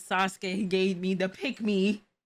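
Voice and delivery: normal talking voice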